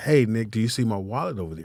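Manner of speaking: hushed, very soft, sassy, acted out. Retelling what he said when asking about his wallet: imitating his own sassy tone. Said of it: "did he say it in that tone?".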